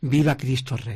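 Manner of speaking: ordinary delivery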